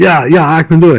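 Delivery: put-on Dutch accent. Retelling what a man in Amsterdam answered when asked for help, imitating a thick accent. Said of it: "he has a real thick accent".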